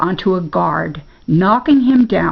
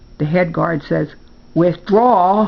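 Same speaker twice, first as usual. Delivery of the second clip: usual speaking voice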